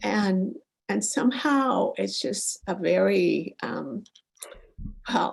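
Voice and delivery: slow, emotional delivery, voice welling up with feeling. Asking for guidance about feeling blocked from their ancestors, getting emotional. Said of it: "Now I'm getting emotional".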